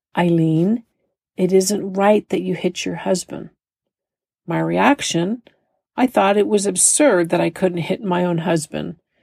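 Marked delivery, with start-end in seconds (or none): 0.1-3.5 put-on gentle tone. Retelling what her husband's father said to her, imitating a gentle tone. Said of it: "in a very gentle manner said".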